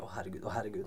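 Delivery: low, soft despairing groan.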